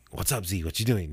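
put-on casual, relaxed voice. Retelling hearing a name called from behind: imitating Drummy's voice calling. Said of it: "it sounded like his voice".

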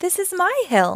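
glad, happy cry. The tree, seeing its hill again, cries happily. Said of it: "the tree cried happily".

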